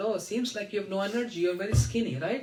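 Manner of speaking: normal talking voice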